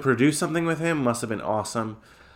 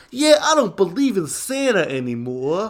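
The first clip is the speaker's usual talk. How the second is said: put-on thick, heavy Brooklyn accent, pitched up; 7 semitones higher, 4 dB louder than usual. Retelling a kid's line, in Ignatius's thick Brooklyn accent. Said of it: "has like the thickest Brooklyn accent".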